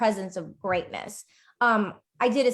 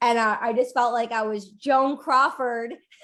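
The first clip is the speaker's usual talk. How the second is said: ordinary delivery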